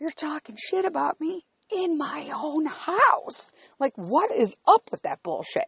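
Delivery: mock furious screaming rant, pitched way up. Retelling a fight in the house: imitating own screaming. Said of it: "And I'm screaming".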